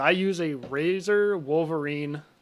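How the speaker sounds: very slow, careful, deliberate speech. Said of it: "I have to say it so slowly".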